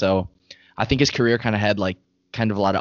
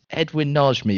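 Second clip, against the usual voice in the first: bad fake British accent, pitched high; 5 semitones higher than usual. Put on the spot by friends, the speaker answers in a British accent. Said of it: "read off the results ... in a British accent".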